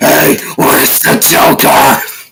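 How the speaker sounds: gruff loud growl. Mocking how Batman talks gruff: imitating a gruff Batman voice. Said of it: "I just don't like him talking gruff when voicing Batman".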